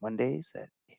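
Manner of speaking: very soft, hushed whisper.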